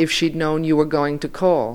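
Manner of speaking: usual speaking voice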